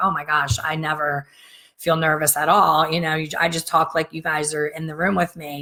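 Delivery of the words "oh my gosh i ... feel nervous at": usual speaking voice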